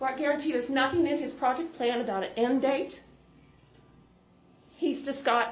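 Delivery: emotion welling up. Speaking at a meeting before the next speaker is called: getting emotional. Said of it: "I'm getting emotional".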